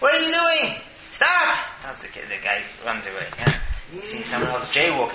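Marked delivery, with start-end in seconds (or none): 0.0-1.6 loud, high-pitched yelling. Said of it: "He starts yelling".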